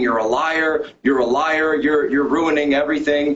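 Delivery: mock, repeated, accusing screaming outburst. Retelling how a senator reacted on hearing a name: imitating someone screaming. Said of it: "started screaming".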